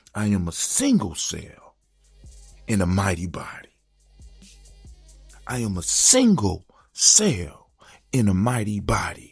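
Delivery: very slow, loud, swooping, full-conviction delivery from chest. Leading a group in a spoken affirmation, said with your chest. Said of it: "you gotta say it with your chest".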